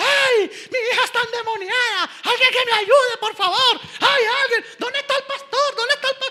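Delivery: desperate woman screaming, high, loud and panicked.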